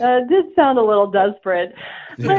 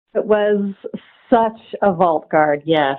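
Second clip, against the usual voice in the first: sultry, sensual delivery in a low tone; 4 semitones lower than usual. Answering the hosts about a vault guard: sensual tone. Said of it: "you said that in a very sensual way".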